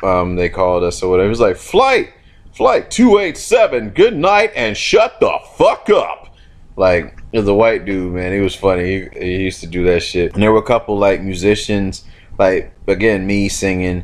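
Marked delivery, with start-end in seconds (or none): 1.3-6.3 mock male announcer voice, much higher and slower. Imitating a guy from basic training who had an announcer voice. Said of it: "he had like an announcer voice".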